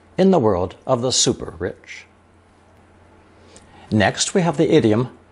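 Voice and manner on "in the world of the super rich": usual speaking voice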